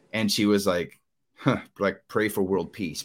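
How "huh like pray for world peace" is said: mock, put-on sarcastic tone. Retelling a checkout worker's reply to an offer of prayer: imitating a sarcastic remark. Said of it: "sarcastic look on her face".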